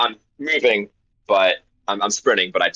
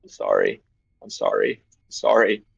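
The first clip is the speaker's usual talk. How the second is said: repeated, mumbled muttering on a loop. Describing characters moving with purpose toward the next one: muttering. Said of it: "They're just muttering".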